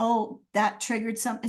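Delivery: ordinary delivery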